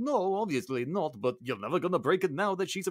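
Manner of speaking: poor attempt at French accent. Retelling the film's plot, the speaker voices Lumiere in a bad French accent. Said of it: "What accent am I doing?".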